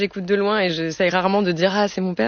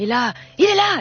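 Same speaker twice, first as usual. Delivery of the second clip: play-acted, sudden, howling scream; 6 semitones higher than usual. Retelling how a scary storyteller suddenly frightened you, imitating a storyteller's scream. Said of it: "Et il hurlait comme ça".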